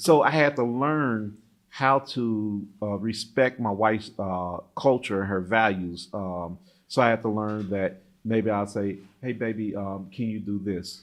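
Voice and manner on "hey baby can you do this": toned-down, softened, much quieter and lower. Husband showing how he learned to ask his wife, toned-down request. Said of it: "so you had to tone down".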